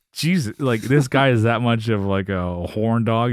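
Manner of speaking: ordinary talk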